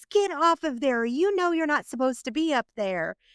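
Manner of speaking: play-acted high, scolding yell. Retelling how a teacher on a playground bench screamed at a child: imitating a teacher screaming. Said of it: "blows her whistle really loud and screams".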